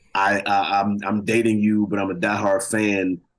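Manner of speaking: ordinary talk, nothing marked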